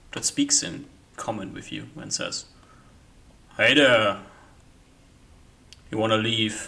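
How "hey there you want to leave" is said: big, loud, bellowing call. Voicing someone behind a door as the players knock: deep, bellowing voice. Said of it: "It's a deep, bellowing voice".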